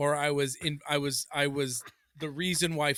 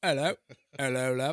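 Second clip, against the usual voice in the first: fake, put-on East London accent. Showing a british person what the speaker can do: fake east london accent. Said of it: "my fake accent".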